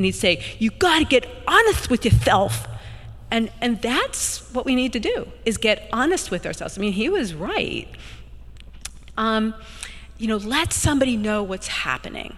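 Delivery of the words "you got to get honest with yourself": put-on loud Staten Island street accent with a lisp. Quoting a Staten Island priest he remembers: Rocky-style voice with a lisp. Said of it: "he talked like Rocky, and on top of that, he had a lisp".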